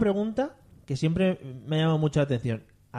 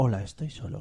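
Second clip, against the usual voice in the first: put-on seductive male voice, lower and quieter; 5 semitones lower, 4 dB quieter than usual. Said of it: "con toda la voz de George Clooney".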